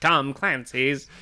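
loud, strange, word-by-word spelled-out reading voice. Mimicking how another speaker just read a title, imitating a weird reading.

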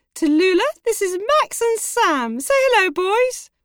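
very high, loud, gushing delivery. Reading a story, the narrator voices Mrs. Dobby introducing the boys: joyful, enthusiastic Mrs. Dobby voice. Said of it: "I hope they've got Sky because the door opened and a woman in a brown owl uniform said, ... She's very pink and enthusiastic and covered in badges".

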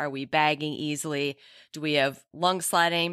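ordinary delivery

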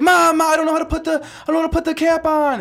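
mock crying. A mother retelling her son crying at the gas station, imitating Dan crying. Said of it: "He's crying".

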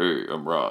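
put-on, fake deep voice register. Asking what it sounds like, then demonstrating a fake deep voice. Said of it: "put a fake like deep thing on your voice".

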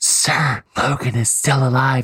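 slow, secretive stage whisper. Recapping a show, acting out a lackey reporting to his boss: whispering. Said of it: "I'm whispering so no one hears you".

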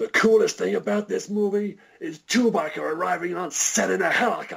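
very high, mock shouting voice. Retelling the director shouting over a helicopter's noise: imitating someone shouting. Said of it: "He shouts".

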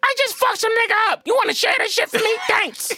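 very high, put-on kangaroo voice. A speaker does a short bit for the others in a kangaroo voice. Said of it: "That was a kangaroo voice".

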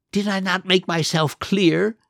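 hissing. Narrating a story, reading the Duke's line to Cinderella as he draws closer, hissing. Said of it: "he hissed".

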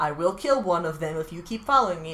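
ordinary delivery

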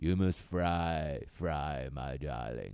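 very slow delivery, word fry stretched long. Retelling a joke riff done with a friend: Tallulah Bankhead voice. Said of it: "we would just start riffing in Tallulah voice".

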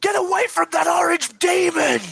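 very high-pitched, shrill screaming shriek. Voicing someone in a battle warning about an orange mech: screaming. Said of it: "you hear somebody screaming".

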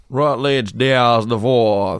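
speaking with a Louisiana accent. Joking about a name, saying it in a New Orleans accent. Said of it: "Say it like you're from New Orleans".

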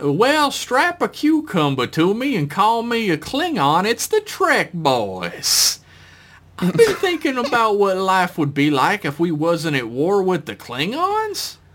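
put-on swooping Southern Georgia accent, in character. Reading a listener's submitted piece, asked to do it again: georgia accent. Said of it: "I am asked to do a Georgia accent again".

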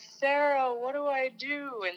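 high-pitched call, drawn out in slow motion. Retelling calling out for help during a birth: imitating own slow-motion yell. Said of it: "and I yelled".

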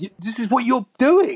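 high, loud, mocking, scolding tone.

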